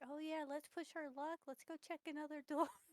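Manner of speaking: hushed, quiet, sarcastic, mocking voice. Suggesting the party check another door: quiet mocking voice. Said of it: "As quietly and as mockingly as I can".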